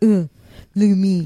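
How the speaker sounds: put-on man voice. Showing the voice they always use at home, doing a man voice. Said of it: "that's my man voice".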